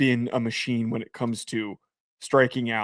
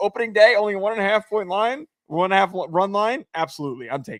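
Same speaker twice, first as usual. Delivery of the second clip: smiling, grinning delivery, pitched up; 8 semitones higher than usual. Telling a Nats fan about betting against their team, smiling while talking. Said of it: "Why are you smiling delivering that?".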